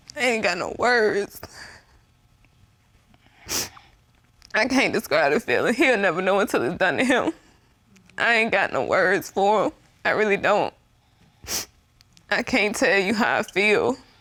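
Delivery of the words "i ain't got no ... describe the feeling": crying while speaking, through sobs. Asked for a reaction to the revelation about Mr. Bailey, sobbing.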